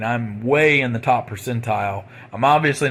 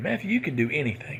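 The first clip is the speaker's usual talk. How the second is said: warm, encouraging, uplifting cheer-you-on voice; 4 semitones higher, 6 dB quieter than usual. Quoting the inner voice of mom: imitating mom's uplifting voice. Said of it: "my really positive, uplifting voice".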